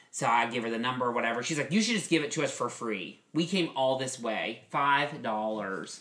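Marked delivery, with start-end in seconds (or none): none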